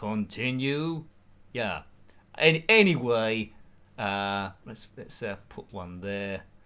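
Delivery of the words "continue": acted announcer delivery. Speaker running through video game voice impressions, doing the Tekken 3 announcer voice. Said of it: "And also the guy of Tekken three".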